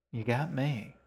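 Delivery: ordinary delivery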